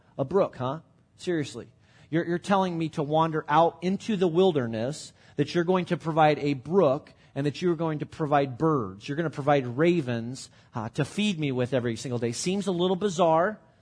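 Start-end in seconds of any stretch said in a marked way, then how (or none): none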